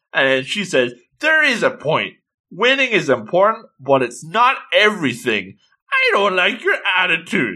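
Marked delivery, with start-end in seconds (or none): 1.2-7.5 higher-pitched, cross, scolding tone. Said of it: "she looks very cross".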